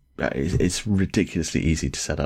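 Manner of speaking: ordinary delivery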